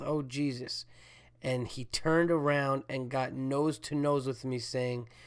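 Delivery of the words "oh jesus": quiet under-breath mutter. Stuck behind a rude man holding everyone up, the speaker retells an under-breath mutter. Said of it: "I said under my breath".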